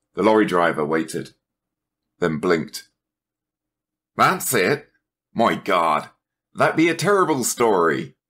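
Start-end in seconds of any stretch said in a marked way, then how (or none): 4.2-8.1 speaking through laughter, a bit high. The lorry driver answers Dennis, laughing. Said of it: "he laughed".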